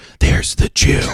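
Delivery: hushed, secretive whisper under the breath. Retelling what people say after seeing an ad: imitating people whispering. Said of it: "I keep hearing people whisper".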